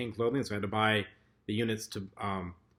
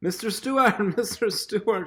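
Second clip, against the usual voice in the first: mock screaming, much higher and slower; 11 semitones higher, 5 dB louder than usual. Recalling the house helper calling him about kitchen smoke, retelling a scream. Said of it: "She's screaming to me".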